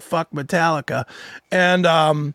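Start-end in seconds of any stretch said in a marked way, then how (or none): none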